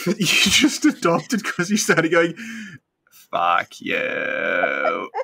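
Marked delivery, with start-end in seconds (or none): 3.3-5.1 put-on alien creature voice. Retelling how the other speaker started going in an E.T. voice. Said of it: "in a voice I said sounded like E T".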